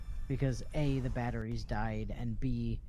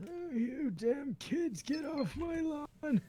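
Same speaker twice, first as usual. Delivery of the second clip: put-on very high, grumpy old man voice; 3 dB quieter than usual. Streamer says he can't do an old man voice, then tries: put-on old man voice. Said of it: "I don't have to do an old man voice".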